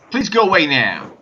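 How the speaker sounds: put-on loud failed American accent. Trying to say a line the way Shatner would; Shatner impression, American accent. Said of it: "I can't do American accents".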